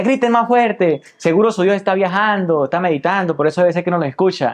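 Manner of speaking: mocking, taunting tone, pitched high.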